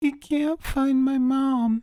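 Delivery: put-on tearful young girl voice. Voicing a girl character whom another player offers to help, crying little girl. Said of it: "she's crying".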